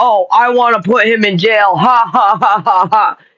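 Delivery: fake evil, slow, gloating villain cackle. Mocking the idea of gloating over someone going to jail: mock vengeful gloating. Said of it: "I'm not even being vengeful".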